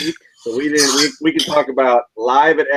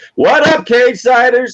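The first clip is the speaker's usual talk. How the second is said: yelling, much higher in pitch and much louder; 10 semitones higher, 7 dB louder than usual. Opening a video podcast by greeting the Cagesiders audience, yelling. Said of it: "why are you yelling?".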